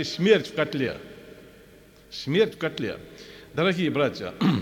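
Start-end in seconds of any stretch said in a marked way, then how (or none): none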